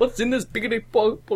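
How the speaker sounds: cartoon bear voice. After a co-host gives a character a cartoon voice, the speaker tries: Yogi Bear voice. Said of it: "the Yogi Bear voice".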